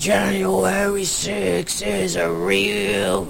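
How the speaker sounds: rough, gravelly voice.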